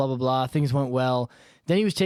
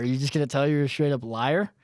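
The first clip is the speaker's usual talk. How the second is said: plain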